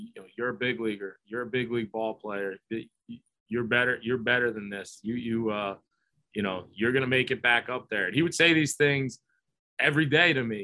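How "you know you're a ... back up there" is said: whispered voice. Retelling what someone would whisper in his ear: imitating someone whispering. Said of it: "just whisper in my ear".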